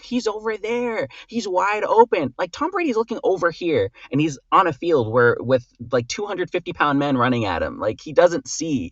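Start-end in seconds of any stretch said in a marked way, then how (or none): 0.0-3.9 high, drawn-out yelling. The speaker retells watching a football game, retelling a scream at the tv. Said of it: "I'm screaming at the T V".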